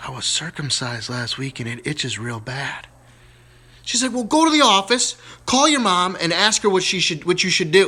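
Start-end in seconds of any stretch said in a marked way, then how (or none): 0.0-2.9 kind of a hushed half-whisper. Telling a joke, as little Johnny answering his teacher, kind of whispering. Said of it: "he kind of whispers".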